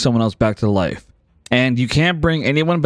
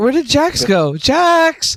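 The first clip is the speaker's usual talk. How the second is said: very high, long, drawn-out calling out; 13 semitones higher than usual. Retelling a scene where a woman calls after Jax, yelling out Jax's name. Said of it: "She like yells out".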